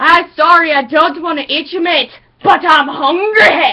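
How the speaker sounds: put-on Scottish brogue, cartoon shark voice. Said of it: "the shark talks like this all the time".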